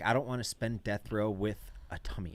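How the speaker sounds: sassy, griping whinge. Retelling a friend's complaint about a death row meal: imitating Che sounding sassy. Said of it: "all sassy".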